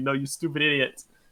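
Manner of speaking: usual speaking voice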